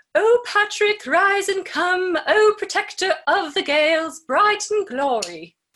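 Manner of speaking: very high, loud put-on British accent. Speaker trying out a reading, first attempt: British accent. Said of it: "Or not a British accent".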